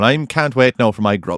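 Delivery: very slow, drawn-out put-on Irish accent. Imagining an irish uncle sitting down at a wedding dinner: imitating an irish uncle. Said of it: "You're an Irish uncle and you're coming over".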